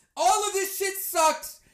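ordinary talk

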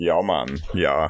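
put-on Jamaican accent. Asked on the spot to do a jamaican accent, in a jamaican accent. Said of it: "can you do me a Jamaican accent?".

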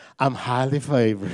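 laid-on, put-on Texas twang. Retelling what they say when spotting front-row parking, put-on Texas twang. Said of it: "I put on the Texas twang and everything".

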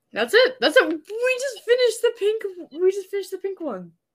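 delighted, very high pitched, happy cheer. Speaker finishes the pink one after an hour and a half, happy. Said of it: "You sound so happy".

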